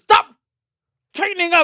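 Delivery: furious, shrill, very high, very loud angry yell. Speaker retells a man scolding him during sex; imitating an angry man. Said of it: "And he's like very angry".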